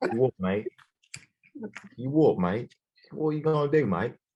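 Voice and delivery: put-on British accent. Riffing on a confrontation with a laughing jerk, put-on British accent. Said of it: "can't really be racist to the British".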